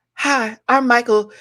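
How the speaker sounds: very high character voice, pitched way up. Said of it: "[name] as Chat G P T".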